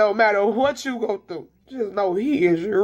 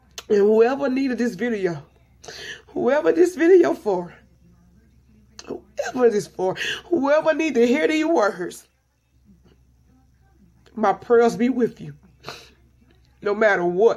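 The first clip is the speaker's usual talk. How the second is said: speaking through tears. Addressing whoever needs this video, crying while talking. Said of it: "I didn't mean to cry".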